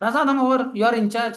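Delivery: loud, high called-out voice.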